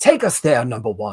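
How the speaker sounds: loose, rough British actor accent. Showing a Patrick Stewart voice, admitting it's not the best version: Patrick Stewart voice. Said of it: "doing my Patrick Stewart's voice".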